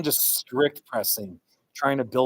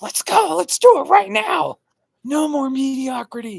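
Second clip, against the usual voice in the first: very high, very loud, all-out intense screaming; 7 dB louder than usual. Speaker recalls what they screamed two days ago: retelling own screaming. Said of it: "I was just screaming".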